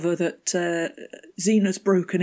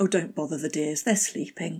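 put-on snarky voice, quieter; 4 dB quieter than usual. Retelling a character's line from the episode: snarky Xena impression. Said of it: "she's so snarky".

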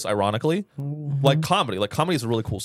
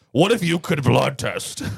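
exaggerated, very deep, rough, creaky voice; 4 dB louder than usual. Mocking how Elizabeth Holmes doubles down on the deep voice: Elizabeth Holmes deep voice. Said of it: "doubles down on the deep voice".

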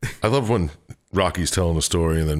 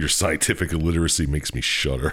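ordinary delivery

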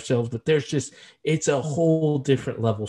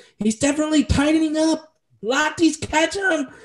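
mock, very high, excited sports commentator call; 3 dB louder than usual. Recalling a favorite Olympic relay moment, imitating an excited sports call. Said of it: "I do a shitty job doing an imitation of it".

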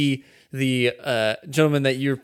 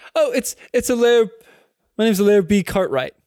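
put-on voice, much higher in pitch and louder; 8 semitones higher, 4 dB louder than usual. Player introducing their tiefling character when asked for a name, high-pitched Alair voice. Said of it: "really a high pitched voice for a tiefling".

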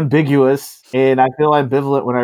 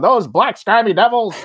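put-on high, old-fashioned, old-timey voice; 8 semitones higher than usual.

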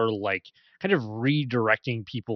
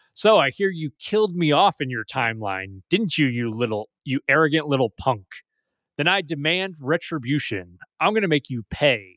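mock, incredibly sassy, playful tone; 3 semitones higher, 5 dB louder than usual. Retelling an anime scene where a woman taunts Trunks, mock-sassy tone. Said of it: "she says in an incredibly the sassy tone".

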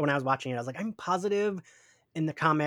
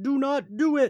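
mock shrill, high, very slow drawn-out shriek; 11 semitones higher, 4 dB louder than usual. Retelling a cartoon scene, imitating Storm screaming. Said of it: "'cause Storm is screaming".

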